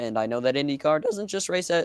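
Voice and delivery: voice cracking. Chatting with another speaker when their voice cracks mid-sentence. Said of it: "oh God, voice crack".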